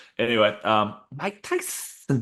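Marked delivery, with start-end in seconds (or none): 1.2-2.2 spoken with a lisp. Imagining a boxer punching a cactus: Mike Tyson impression. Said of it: "I can't do a very good Mike Tyson".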